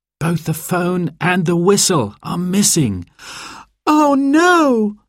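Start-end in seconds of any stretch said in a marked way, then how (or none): 3.9-4.9 very high dismayed cry, drawn-out no. Sarah hears that Dad's phone and whistle are both missing; crying out. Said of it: "cried Sarah".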